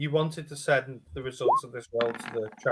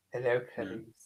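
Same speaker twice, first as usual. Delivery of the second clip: put-on creepy killer voice, quieter; 15 dB quieter than usual. Showing the others a quick Hannibal Lecter impression. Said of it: "I could do Hannibal Lecter".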